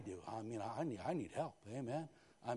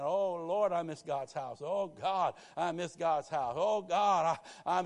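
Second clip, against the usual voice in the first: slow, near-tearful voice on the edge of crying; 5 semitones higher, 8 dB louder than usual. Retelling how a church member missed church, imitating someone near tears. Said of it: "She's just about crying".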